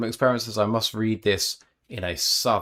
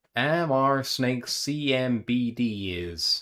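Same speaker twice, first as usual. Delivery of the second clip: very slow American Southern drawl; 3 semitones higher than usual. Reading out a spelled-letter sentence as an Arkansas reading test, southern accent. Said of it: "the southern accent was for the Arkansas reading test".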